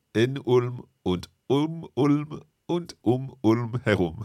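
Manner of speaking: each word set apart, unhurried. Student repeating a phrase back after the teacher asks, slowly word by word. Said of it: "see if you can repeat it slowly".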